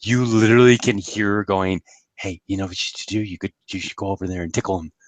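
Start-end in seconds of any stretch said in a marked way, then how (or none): 2.1-4.9 soft, hushed half-whisper. Retelling what Rainbow Dash half-whispers to Philomena: imitating Rainbow Dash half-whispering. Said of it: "whispers in her ear".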